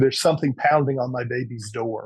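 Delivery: plain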